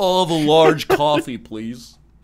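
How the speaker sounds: loud, slow put-on American accent. Imitating an american ordering a large coffee: american impression. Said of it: "Here's my American impression".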